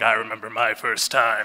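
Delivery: put-on low old smoker voice. Retelling what his partner at the time said, making him sound like an old smoker. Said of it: "I'm making him sound like an old smoker".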